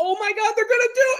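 very high, thrilled play-by-play, bursting with excitement. Describing a commentator's excitement for the game: Tony Romo impression. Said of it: "that was a great impression of Romo right there".

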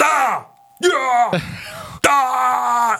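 play-acted very high, stretched cries of ah. Imitating the game character dying, old man Link: imitating old man Link screaming. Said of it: "So he's screaming".

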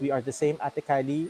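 ordinary talk

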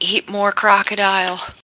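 hushed half-whisper under the breath. Speaking as their character in the game, the player half-whispers a reply: half-whispered. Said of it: "I'm gonna whisper back".

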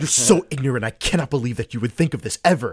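mock outraged, furious, accusing rant. Retelling what a guy said to Sky: imitating a very angry man. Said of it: "He was so mad at Sky".

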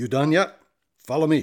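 loud, gruff commandant voice. Reading a story where the airport commandant glares and asks: gruff voice. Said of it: "asks in a gruff voice".

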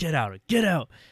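put-on angry outburst. Retelling a shopkeeper throwing someone out: imitating a frustrated yell. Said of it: "He gets really frustrated".

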